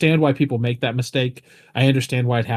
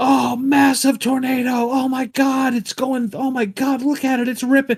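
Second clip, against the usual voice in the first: acted-out, very high, thrilled, excited screaming; 13 semitones higher than usual. Describing someone posting a tornado video, imitating them screaming. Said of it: "you screaming like".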